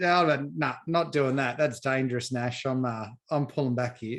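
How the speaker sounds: ordinary talk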